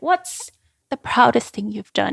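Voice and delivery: put-on English with Dutch accent. Retelling a first-year advisor's interview question: imitating a Dutch accent. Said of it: "his Dutch accent".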